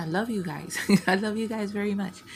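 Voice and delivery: moved, heartfelt, emotional, rushed outpouring. Youtuber thanking viewers who are missed, getting emotional. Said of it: "So now I'm getting emotional".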